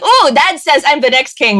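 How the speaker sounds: usual speaking voice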